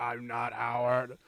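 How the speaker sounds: dark, menacing, sinister movie-style voice. Recapping a movie, imitating a character's line in his sinister voice. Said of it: "when he does the whole sinister voice".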